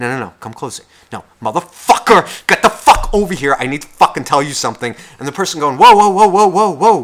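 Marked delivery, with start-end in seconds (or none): 1.4-4.9 angry shout, much louder. Speaker acting out someone who gives up on whispering, angry shout. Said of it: "I had to get louder".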